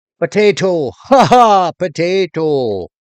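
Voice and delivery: loud, high, put-on Irish accent. Speaker shows off his accent after talking about Ireland: Irish accent. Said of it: "How's my Irish accent?".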